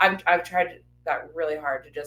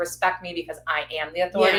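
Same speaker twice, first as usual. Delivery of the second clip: ordinary talk, nothing marked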